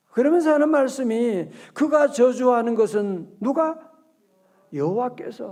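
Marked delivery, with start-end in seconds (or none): 1.8-5.6 여호와께서 stressed and slow. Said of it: "동그라미 쳐요".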